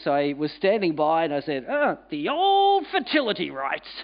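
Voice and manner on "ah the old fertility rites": high, swooping pitch throughout. Retelling his own quip to a temple guide: Maxwell Smart voice. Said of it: "in my very best Maxwell Smart impersonation voice".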